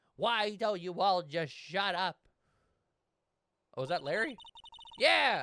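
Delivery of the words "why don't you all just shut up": imitated child's voice. Voicing a scene with other characters, kid Miles voice. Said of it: "I did kid Miles voice".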